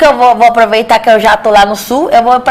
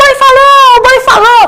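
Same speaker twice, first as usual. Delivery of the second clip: panicked yell, high pitched. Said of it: "o escravo saiu gritando".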